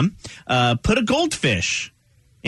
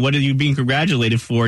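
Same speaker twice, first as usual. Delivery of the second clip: usual speaking voice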